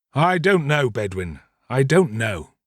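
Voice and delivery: ordinary delivery, nothing marked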